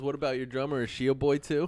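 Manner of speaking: ordinary talk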